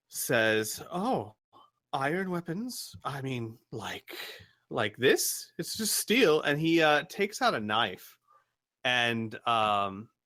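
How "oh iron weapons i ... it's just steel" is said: put-on nervous, jumpy, high-pitched teenage voice. Voicing a young lookout asked about iron weapons: jittery young lookout. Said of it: "Still very jittery".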